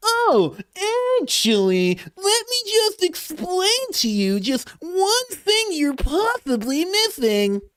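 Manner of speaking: very high-pitched, needling, provoking voice. Speaker shows how he answers someone who says that: antagonizing voice. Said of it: "the most antagonizing, antagonizing voice that I can possibly do".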